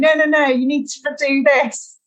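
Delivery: mock man's shouting. Retelling a man who shouted running advice mid-race; imitating a man shouting. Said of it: "he continued going".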